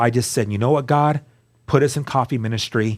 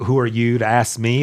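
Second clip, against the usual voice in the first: put-on macho tough-guy tone. Retelling a reply to someone who asked a question: imitating own macho voice. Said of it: "in my kinda, like, macho".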